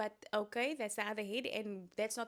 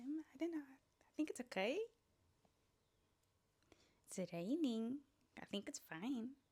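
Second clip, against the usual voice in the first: uptalk, rising ends on okay, raining, fine; 4 semitones higher, 6 dB quieter than usual. Demonstrating answering a question about the weather with upward inflection. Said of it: "You're asking the question".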